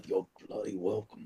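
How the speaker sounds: very quiet, low mumble under the breath. In a game scene, as she flies past, Ajax mumbles under his breath. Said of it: "mumbles under his breath".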